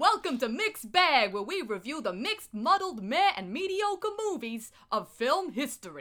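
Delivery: Brooklyn accent. Podcast host welcomes listeners to the show in a brooklyn accent. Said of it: "that was not as good a Brooklyn accent".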